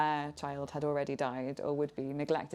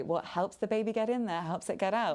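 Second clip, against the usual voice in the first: play-acted coy, twee, lightly raised voice; 6 semitones higher than usual. Retelling what midwives say to someone wanting labour induced: imitating midwives' twee tone. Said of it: "say it in a kind of twee way".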